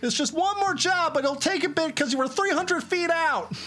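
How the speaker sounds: high big-city mouse marshal character voice. In a roleplay game, playing the character in a big-city mouse marshal voice. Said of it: "I'm [name]. I'm the big city marshal".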